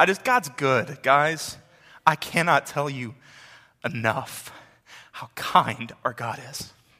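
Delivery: tearful voice, crying while speaking. Speaking to the gathered people before praying, crying while talking.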